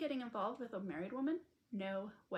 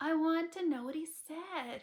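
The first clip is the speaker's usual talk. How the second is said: sulky, pouty, high and raised voice; 5 semitones higher, 6 dB louder than usual. A woman presses another woman to repeat what a man said, pouty voice. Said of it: "she said in a pouty voice".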